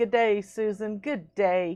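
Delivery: put-on Australian accent. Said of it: "We're practicing our Australian accent".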